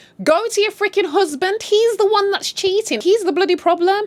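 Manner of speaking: high, loud, exasperated outburst.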